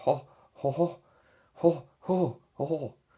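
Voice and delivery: very slow laugh, each "ho" drawn out. Playing a Disney game, doing a genie laugh: bad Robin Williams impression.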